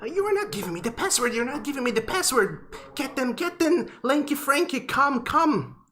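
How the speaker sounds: very high, shrieking owl screech. Voicing an owl shouting at the party for the password: owl screaming. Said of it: "screaming at the rest of you".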